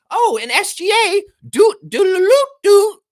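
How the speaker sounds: crazed, shrill, booming hollering, stretched out long. Showing off an impression right after claiming the skill: Nardwuar impression. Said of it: "I can do Nardwuar".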